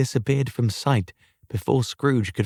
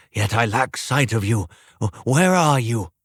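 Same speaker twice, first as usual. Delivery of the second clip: ordinary delivery, nothing marked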